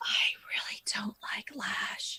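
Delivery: hushed, secretive whisper, very soft. Keeping a remark from two others so they can't hear, whispering. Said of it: "I'm whispering because I'm whispering so they".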